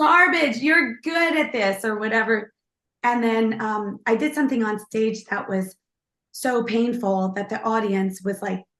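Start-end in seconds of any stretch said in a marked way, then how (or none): 0.0-1.8 yelled with raised, high-pitched voice. Retelling what a woman yelled at them on stage, retelling a yell. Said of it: "she yelled at me".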